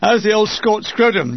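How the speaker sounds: ordinary delivery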